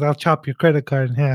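ordinary delivery

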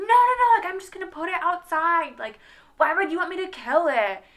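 shrill, loud shouting. Retelling how he screamed back at the speaker, retelling him screaming back. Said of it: "he's like screaming back at me".

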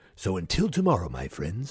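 put-on radio announcer voice, deep and swooping. Podcast host signing off an episode, in an announcer voice. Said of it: "did I just put on an announcer voice?".

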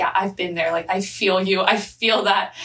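plain

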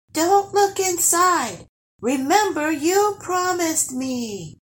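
very high-pitched, far-away, distant-sounding voice. Gurry calls to the troll who is about to peek into the chest, far-away voice. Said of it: "said Gurry in a voice that sounded like it was far away".

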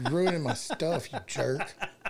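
laughing, mock scolding tease.

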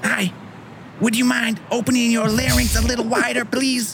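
low, dropped put-on character voice. Reading an old radio script aloud on the fly: Mike Tyson voice. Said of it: "Sound like Mike Tyson".

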